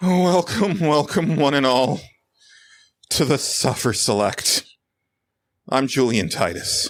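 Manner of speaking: put-on dejected, woeful, miserable voice at high pitch. The host opening the show, trying to sound miserable. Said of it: "I don't know why you sound so depressed".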